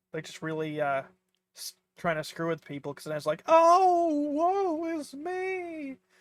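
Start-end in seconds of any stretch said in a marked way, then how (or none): 3.4-5.9 fake over-the-top despair, higher and louder. Showing how people over-exaggerate to mess with others: mock exaggerated despair.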